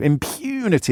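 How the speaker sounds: contemptuous, said with open scorn. Showing how the word impunity can be said: contemptuous 'impunity'. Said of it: "you can say it with with contempt".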